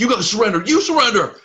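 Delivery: frightened, very high cry. Voicing frightened archers demanding surrender: frightened guards. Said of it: "they look frightened".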